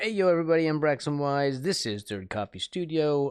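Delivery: on-air radio host delivery. Opening the recording with a spoken intro: radio announcer voice. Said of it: "I sound like a radio announcer".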